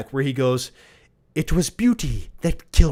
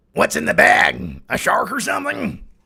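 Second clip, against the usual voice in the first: pitched-up, rough, creaky, rasping voice; 6 semitones higher than usual. Asking a question in a put-on voice, Nick Nolte voice. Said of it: "in my Nick Nolte voice".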